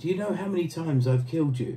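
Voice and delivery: mock proud, boastful, showing-off tone. Recalling first meeting an interviewee, retelling a proud boast. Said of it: "I think I said proudly to him".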